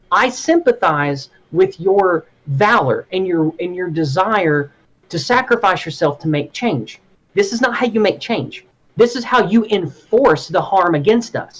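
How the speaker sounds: normal talking voice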